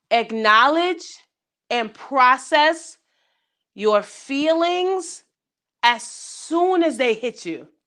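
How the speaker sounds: slow, halting, deliberate, broken into careful chunks. Speaker giving listeners the fourth and biggest tip, slow, deliberate delivery. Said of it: "I'm gonna say that slow".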